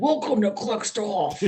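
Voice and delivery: put-on scary intro announcer voice. Retelling what was said about the Clicksoft intro: imitating scary Clicksoft intro voice. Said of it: "Got scary".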